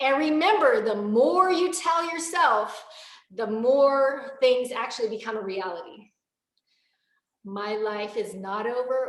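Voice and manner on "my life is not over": lacking conviction, lower. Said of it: "Does that sound like I'm convicted".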